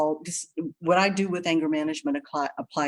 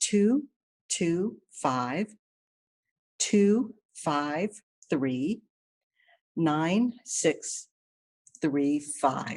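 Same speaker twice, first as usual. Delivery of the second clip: very slow, deliberate pace. Giving a phone number to listeners writing it down, talking slowly. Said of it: "I'm talking slow because I write slow".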